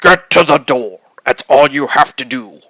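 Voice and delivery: heroic, rallying robot leader voice. Describing the inner voice that gets them to the door, Optimus Prime voice. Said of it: "sounds kind of like Optimus Prime".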